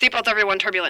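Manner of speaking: quick, abrupt, rushed blurted delivery. Retelling a pilot's turbulence announcement over the plane microphone: blurted out quickly. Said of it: "he really just kind of got that out there quick".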